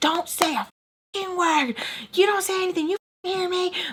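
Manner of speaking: acted-out, very high, furious, raging yelling. Retelling a caller screaming through the phone: imitating someone yelling on the phone. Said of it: "she's just going off".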